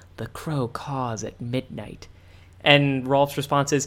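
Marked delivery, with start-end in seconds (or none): 0.2-2.1 slow, shifty, furtive, leaned-in spy voice. Retelling Eddie's pseudo spy password: imitating shifty secretive spy talk. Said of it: "gets in real close and shifty".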